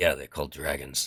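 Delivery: muttering quietly under breath. Voicing one of the guards answering a player: muttered under his breath. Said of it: "one of them under his breath say".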